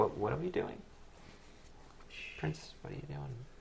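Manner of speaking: very quiet, very hushed half-whisper. In a tabletop game, following another character up a wall, kind of whispering. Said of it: "Like I'm kind of whispering".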